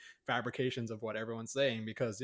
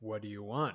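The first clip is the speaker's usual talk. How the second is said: creeping voice sliding softly into the ear. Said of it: "that voice just kinda, like, creeps into your ear".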